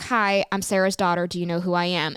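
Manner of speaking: ordinary talk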